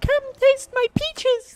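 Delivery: put-on very high little-kid voice. Repeating what another speaker said, imitating a child's voice. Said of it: "that is a child's voice".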